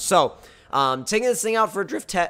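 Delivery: voice cracking, suddenly jumping high mid-phrase. Creator narrates taking a car out for a drift test, voice cracking. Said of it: "nice voice crack".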